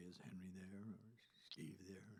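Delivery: very quiet, low, very soft bedroom voice. Retelling calling the guitarist's house when the mother answered: bedroom voice. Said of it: "where'd you get that bedroom voice?".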